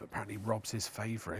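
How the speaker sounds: hushed, playful, conspiratorial half-whisper. Reading out a viewer's message aloud: mock half-whisper. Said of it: "apparently I've got to whisper this".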